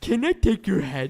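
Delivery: high, slow, dopey cartoon character voice.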